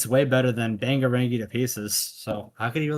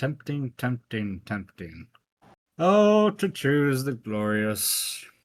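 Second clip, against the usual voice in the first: slow, lingering, deliberate, stretched-out delivery. Musing over which pick to choose: sounding like Stoufferex. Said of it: "You sound like Stoufferex right now".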